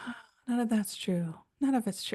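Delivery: soft, hushed, high-pitched put-on voice. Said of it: "I find myself saying that in his voice".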